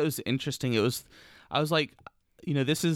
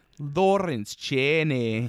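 imitated Scottish accent. Retelling a quote said in a Scottish accent: imitating a Scottish accent. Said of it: "say one thing in a Scottish accent".

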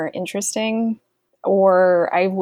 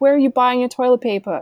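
bad put-on New York accent, pitched up; 5 semitones higher than usual. Quoting the daughter in a scene, in a terrible New York accent. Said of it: "She has a terrible New York accent".

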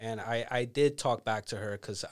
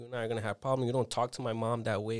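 normal talking voice

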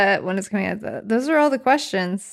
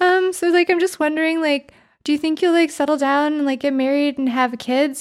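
put-on nervous woman's voice, much higher pitch; 6 semitones higher than usual. Describing a woman questioning a celebrity on a talk show, imitating a nervous woman. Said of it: "impression of like the nervous heterosexual woman in front of a celebrity".

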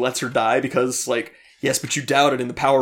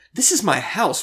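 mock betrayed tone, higher pitched; 7 semitones higher than usual. Quoting the narrator walking in on Marla: imitating a betrayed tone. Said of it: "so much betrayal in his voice as he says".

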